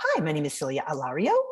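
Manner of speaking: extreme rising, uptalk ending on "Alario". Extreme uptalk example of a self-introduction, rising at the end. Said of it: "Uptalk is when the end of the sentence goes up and it sounds like it's a question. So an extreme version of that might be".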